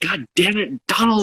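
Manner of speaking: mock frustrated shout. Retelling a quiet game where he screams at his running back: Peyton Manning's angry yell. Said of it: "And he yells".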